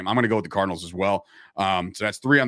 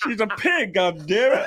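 higher pitch with the words dragged out; 12 semitones higher than usual. Joking that Kermit rejects Miss Piggy: Kermit the Frog voice. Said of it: "I can't do Kermit, but I'm, I'm trying here".

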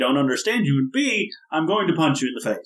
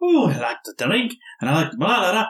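stock stage Scottish accent; 4 semitones higher than usual. Showing how a stereotypical Scotsman character would talk, in a stereotypical Scottish accent. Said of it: "you can't do a Scottish accent".

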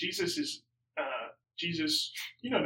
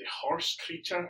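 bad, pitched-up attempt at a Scottish accent; 6 semitones higher, 4 dB quieter than usual. Naming the horse creature from the final episode: bad Scottish accent like Groundskeeper Willie. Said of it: "That did not sound Scottish".

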